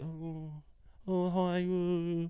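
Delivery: timid, hesitant, shy, soft high little voice. Retelling how the dog greets another dog: voicing the dog, a little bit shy. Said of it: "a little bit shy".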